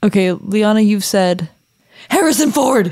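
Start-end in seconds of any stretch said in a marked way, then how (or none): 2.1-2.9 put-on scream, higher. Reading out another speaker's note: imitating someone screaming. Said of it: "she screamed in her apartment".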